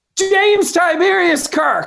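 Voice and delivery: put-on play-acted, high, hollering little kid's yell. Retelling a trailer scene where a kid answers a cop: imitating a kid yelling. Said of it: "The kid yells".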